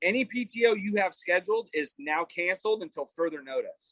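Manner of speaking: usual speaking voice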